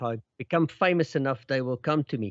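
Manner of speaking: normal talking voice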